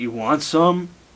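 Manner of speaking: put-on stoner voice. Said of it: "he just sounds like a stoner".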